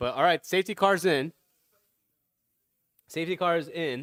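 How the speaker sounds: talking with mouth full while chewing. Commenting on the race while eating, talking while chewing. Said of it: "Sorry, I was chewing".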